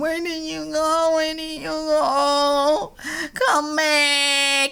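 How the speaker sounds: acted-out tearful crying, very high. Teasing the listener about crying while they were gone, imitating someone crying. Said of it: "you were already crying and going".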